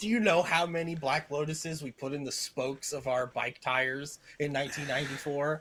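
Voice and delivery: ordinary talk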